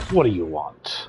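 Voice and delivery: growling, angry orc voice. Voice-acting as an orc for the viewers' entertainment: angry orc voice. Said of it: "I'm an orc, so we sound angry".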